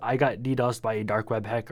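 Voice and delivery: ordinary delivery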